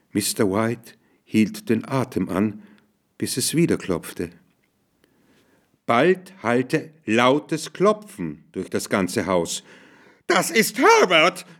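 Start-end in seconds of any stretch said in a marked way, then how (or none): 10.2-11.4 high, piercing, shrieking cry. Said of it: "kreischte die Frau".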